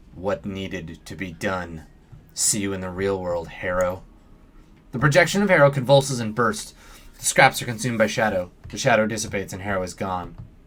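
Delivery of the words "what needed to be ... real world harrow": low, eerily calm, unruffled delivery. A narrator reads her words to Harrow's projection, strangely calm. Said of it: "her voice is strangely calm".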